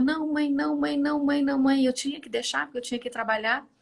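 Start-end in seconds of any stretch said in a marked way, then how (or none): 0.0-1.8 mock crying child's voice, high and pleading. Retelling a son left at school, imitating a crying child's plea. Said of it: "ele ficou chorando".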